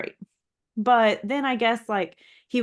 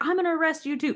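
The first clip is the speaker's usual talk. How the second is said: mock hot-headed, high, angry screaming yell; 7 semitones higher, 3 dB quieter than usual. Retelling how a cop threatened a bystander: imitating a cop screaming. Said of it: "screaming at this guy".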